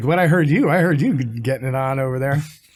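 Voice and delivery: ordinary delivery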